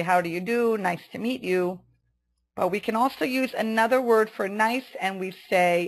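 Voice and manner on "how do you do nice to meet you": ordinary talk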